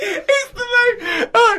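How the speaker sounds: high, laugh-cracked, laughing hard, disbelieving.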